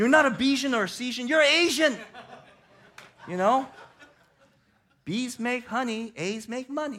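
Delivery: put-on dad voice, very high, very loud, shrill.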